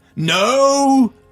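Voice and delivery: very high, stretched-out, drawn-out bellowing roar. Recounting a man who demanded his name be said, retelling a roar. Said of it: "He roared".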